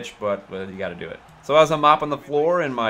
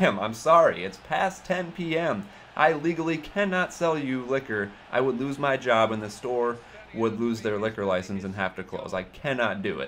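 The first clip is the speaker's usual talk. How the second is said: ordinary delivery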